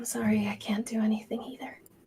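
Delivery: very quiet hushed whisper under the breath. Ty speaks in the back of Kanari's mind, whispering. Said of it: "is going to whisper".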